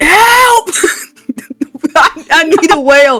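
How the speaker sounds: screaming. Playing a druid calling out to the ocean for a whale: screaming for help. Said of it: "I'm just screaming".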